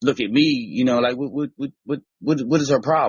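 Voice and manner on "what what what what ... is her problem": mock fed-up, indignant, sputtering kid grumbling. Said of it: "just sit back like he mad or something".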